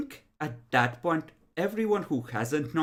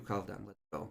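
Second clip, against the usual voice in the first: very low, quiet, hushed half-whisper; 8 semitones lower, 13 dB quieter than usual. Escorting someone out while gripping their upper arm; half-whispering. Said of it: "he just whispers to you".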